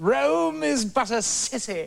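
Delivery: grand classical stage actor voice, slow, high declaiming.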